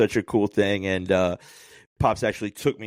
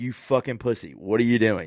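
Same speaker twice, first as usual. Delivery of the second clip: imitated derisive laughter. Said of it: "turning to me and laughing at me".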